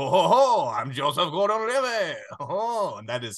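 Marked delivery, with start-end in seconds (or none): 0.0-2.2 slow, fake, put-on French accent. Recounting a film performance, quoting it in a put-on French accent. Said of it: "he puts on the French accent. And he's like".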